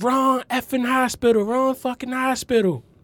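shrill, very high-pitched shout. Retelling a ride in the ambulance, imitating a shouting paramedic. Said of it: "She was shouting to the driver".

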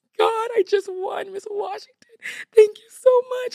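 acted-out, very high-pitched, tearful bawling. Retelling a tearful imagined win reaction in the car: imitating own past bawling. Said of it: "I'm bawling in the car".

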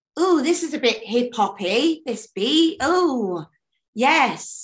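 high, ooh-ing pop songwriter voice. Retelling how songwriters reacted to a beat: imitating pop songwriters. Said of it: "they would just be like pop songwriters".

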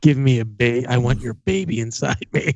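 imitated whisper. Joking about what a partner will whisper after hearing the episode: put-on whisper. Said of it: "she's gonna whisper in his ear".

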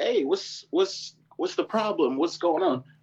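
high, worried, concerned voice.

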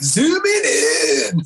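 obnoxious, annoying surfer dude voice. Imitating a talking gun from a game: imitating annoying surfer dude voice. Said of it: "like a really annoying surfer dude".

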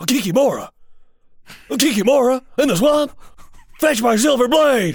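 high, wild, theatrical yell. Imagining Nicolas Cage playing The Witcher, Nicolas Cage voice. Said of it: "so this would be Nicolas Cage as The Witcher".

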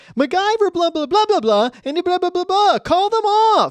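mock high whining, complaining holler. Describing a character who yells all episode, imitating his whiny yell. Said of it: "It's that whiny yell that he does".

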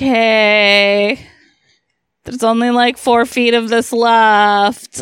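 mock glum worn-down old man, slow and drawn out. Retelling a movie scene, imitating a miserable character. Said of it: "he's just miserable".

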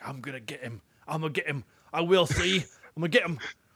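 put-on clichéd Southern English accent. Describing a film scene, imitating Jude Law's hackneyed Southern England accent. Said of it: "he got like Southern England, like that hackneyed".

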